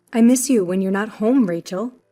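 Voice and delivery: ordinary talk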